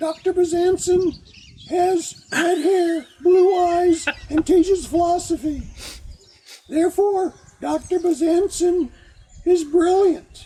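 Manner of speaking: acted high-pitched voice. Retelling what a French philosophy teacher said in class: imitating a teacher's high voice. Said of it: "he had a very high voice".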